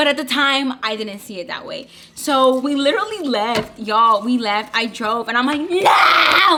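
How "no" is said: hysterical, high, loud screaming shout. Retelling a fight while driving away, imitating her own screaming. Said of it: "I was screaming".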